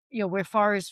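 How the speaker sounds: usual speaking voice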